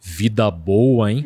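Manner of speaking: dropped, deep, thick-toned voice. Retelling a voice heard during sleep paralysis, in a deep thick voice. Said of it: "Voz grossa assim".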